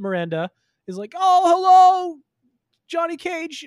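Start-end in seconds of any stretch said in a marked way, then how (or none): 1.2-3.7 shrill, very loud, big cartoonish shriek. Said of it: "Sorry, that was my [name]".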